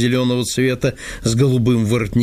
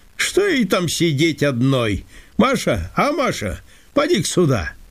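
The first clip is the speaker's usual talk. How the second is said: sudden, abrupt, high, swooping exclamation, called out; 5 semitones higher than usual. A man suddenly calls to someone in the next room, exclaiming. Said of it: "Воскликнул он вдруг".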